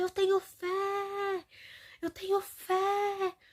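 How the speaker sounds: put-on high, very slow shout, "fé" drawn out. Retelling how a man started shouting, retelling a shout. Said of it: "E começou a gritar".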